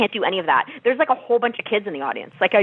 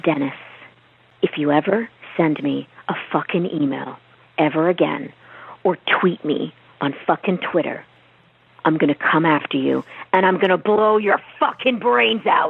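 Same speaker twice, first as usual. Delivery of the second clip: vicious, low, mean, menacing tone; 5 semitones lower than usual. Performing a threatening line, mean and menacing threat. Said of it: "So mean".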